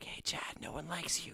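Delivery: hushed whisper. Playing a tabletop game, casting a spell that whispers insults at another character: whispering insults. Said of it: "So I magically start whispering".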